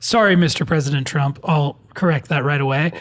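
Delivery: ordinary delivery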